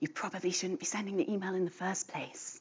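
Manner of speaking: hushed, very soft aside. Explaining email etiquette to viewers, in a hushed voice.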